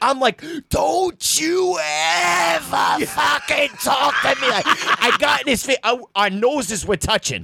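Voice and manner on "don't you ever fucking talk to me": mock enraged, rough and slow, ever very drawn out. Retelling confronting a man who screamed at him: retelling a furious outburst. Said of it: "full unbridled rage".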